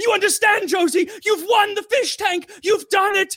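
very high, frenzied, frantic insistent freak-out. Retelling someone announcing a prize winner: imitating someone freaking out. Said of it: "he starts freaking out and shaking".

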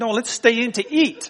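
put-on annoyed, impatient voice. Retelling answering their kids at Subway while hungry, retelling an irritated reply. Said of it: "with an irritated voice".

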